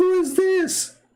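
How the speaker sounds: shrill, very high-pitched, womanlike feminine voice. Retelling a knock at the door at night, put-on female-like voice. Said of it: "his voice was like a female".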